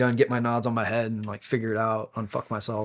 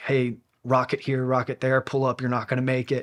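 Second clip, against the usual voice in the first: imitated screaming; 2 semitones higher than usual. Retelling what a buddy heard on the helicopter comms: imitating pilots screaming. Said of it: "the pilots were screaming".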